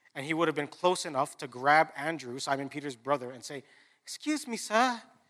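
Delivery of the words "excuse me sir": put-on child voice with British accent, higher and quieter. Acting out a boy in a Bible story asking for attention: British accent. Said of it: "the kid ... has a British accent".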